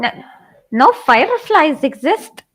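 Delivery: rough attempted Jamaican accent. Imagining what a jamaican aunt would say: attempted jamaican accent. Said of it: "I bet you in a Jamaican aunt".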